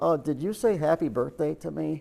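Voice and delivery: put-on tiny little small child's voice. Working deep in an engine, he retells a voice he heard, little voice. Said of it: "I hear this little voice".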